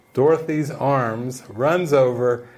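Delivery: ordinary talk, nothing marked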